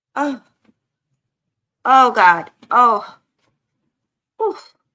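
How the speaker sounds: strained voice. Talking to viewers while struggling with a numb foot, strained, foot gone numb. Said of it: "My foot went numb".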